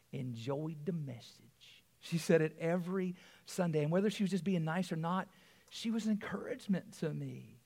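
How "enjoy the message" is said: cute, sweet, soft Tennessee twang. Recalling a grandmother in the congregation encouraging him every Sunday, in a cute Tennessee twang. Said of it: "in her cute Tennessee twang".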